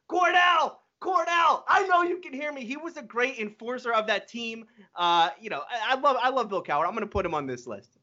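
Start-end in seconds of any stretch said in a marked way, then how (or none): 0.1-2.6 very high-pitched, screaming yell. Retelling a coach's sideline moment with a referee: imitating Bill Cowher screaming. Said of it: "when he's screaming".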